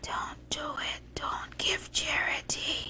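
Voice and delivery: hushed, urgent whisper close to the ear. At a charity announcement, speaking into people's ears, whispering. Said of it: "there I am whispering in their ears saying".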